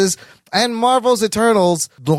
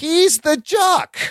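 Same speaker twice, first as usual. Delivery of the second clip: very slow, dragged-out, pitched-up delivery; 8 semitones higher than usual. Introducing the podcast hosts, speaking very slowly. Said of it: "Why are you saying it so slow?".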